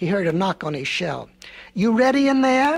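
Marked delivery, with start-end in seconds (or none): 1.7-2.8 storybook wolf voice, loud and high, calling out. A wolf knocks on a tortoise's shell and calls in to him, crying out. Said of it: "cried the wolf".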